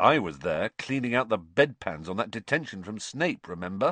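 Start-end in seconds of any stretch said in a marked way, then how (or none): none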